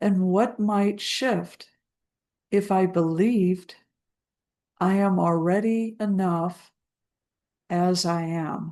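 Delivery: slow, spaced-out dictation. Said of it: "I'll say it slowly so you can write it down".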